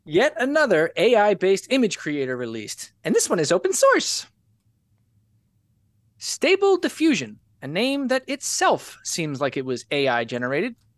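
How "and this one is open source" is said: squeaky, very high-pitched voice. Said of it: "as I said before in a real high voice".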